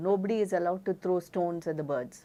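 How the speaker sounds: usual speaking voice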